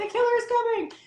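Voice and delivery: very high-pitched horror-movie screaming yell. Retelling dubbing an actress's voice in a horror film: imitating screaming and yelling. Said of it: "So I'm screaming and yelling".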